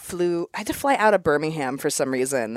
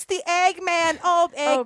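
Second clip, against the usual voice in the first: put-on woman's voice, pitched higher; 14 semitones higher than usual. Retelling a film scene where an Eggman brings eggs: imitating Edith Massey. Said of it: "it's her just being like".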